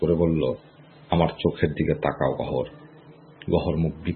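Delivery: ordinary delivery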